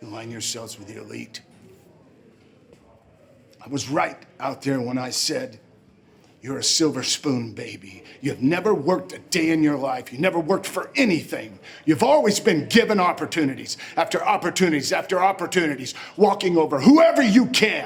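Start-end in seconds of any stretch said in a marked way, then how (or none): 3.6-17.9 very loud, furious, enraged tirade. Speaking directly to the man who turned on his boss, furious. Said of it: "Sorry, I'm so pissed right now".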